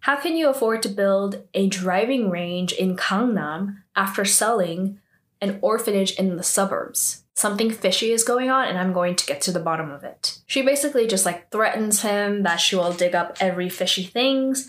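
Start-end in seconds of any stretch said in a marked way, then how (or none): none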